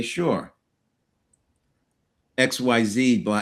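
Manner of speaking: implying intonation on sure, long pause before X Y Z.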